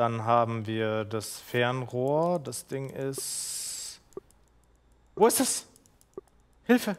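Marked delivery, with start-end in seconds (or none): 5.2-7.0 frantic panicked cry, very high and rushed. Gamer searching for a task during a game, panicking.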